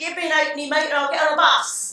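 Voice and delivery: very strong, high-pitched, loud London street accent.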